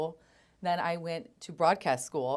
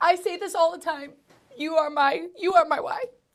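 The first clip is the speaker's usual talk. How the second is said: very high-pitched, on the verge of tears; 11 semitones higher, 7 dB louder than usual. Thanking the person who made them fall in love with radio, about to cry. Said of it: "I'm gonna cry".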